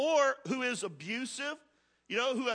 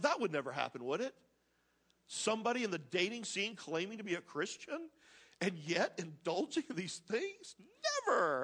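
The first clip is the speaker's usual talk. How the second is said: openly sarcastic, swooping sing-song tone; 4 semitones lower, 6 dB quieter than usual. Commenting on a scripture verse about dating believers: sarcastic. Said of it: "I'm being sarcastic".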